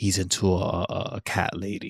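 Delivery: hushed, quiet stage whisper. Voicing a character who leans in to the player: half-whispering. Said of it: "he now whispers to you".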